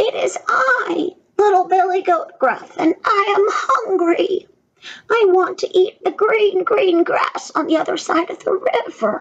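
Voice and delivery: tiny voice, pitched very high. Narrator reading the children's story, the little goat answers the troll: very small Billy Goat voice. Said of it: "answered in his very small Billy Goat voice".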